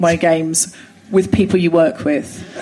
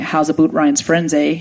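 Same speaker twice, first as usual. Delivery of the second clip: put-on old Canadian accent. Retelling an interrogation by Jehovah's Witness elders, imitating them in a Canadian accent. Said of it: "it's hard to make the Canadian accent sinister".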